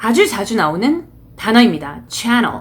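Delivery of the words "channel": channel with heavy stress on first syllable chan. Teaching English vocabulary from news broadcasts in tests: stress on "chan" in channel. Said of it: "이 단어는 앞쪽에 강세가 들어가 있죠".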